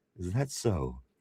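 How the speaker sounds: put-on dramatic, theatrical delivery. Reading a viewer's chat comment aloud: mock dramatic delivery. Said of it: "In dramatic fashion".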